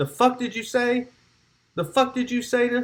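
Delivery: shrill, high, enraged, furious screaming. Retelling how one man looked at another and answered him, imitating someone screaming at another man. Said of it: "Cal's screaming at him".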